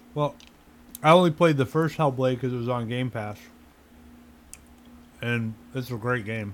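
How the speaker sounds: speaking while chewing on an ice cube. Discussing a game, the speaker talks while chewing on an ice cube. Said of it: "Sorry, I'm chewing on an ice cube".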